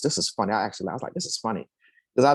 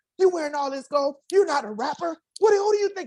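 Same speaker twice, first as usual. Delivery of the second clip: very high, rising, angry yelled rant, acted out. Driving to the bank, repeating everything people ever said to him: retelling yelled insults. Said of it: "I was yelling out everything everybody had ever said to me".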